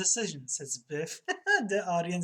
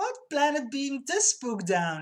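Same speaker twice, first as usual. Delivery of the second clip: high, squeaked-out little squeak; 8 semitones higher than usual. Reading a Leisure Suit Larry scene aloud, a woman's line in a squeaky voice. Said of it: "She squeaks".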